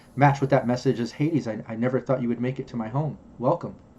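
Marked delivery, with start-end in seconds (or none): 1.2-3.8 gentle, soft, hushed angelic machine voice. Voicing an ai avatar greeting a player: soft angelic ai voice. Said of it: "it had a very soft approach".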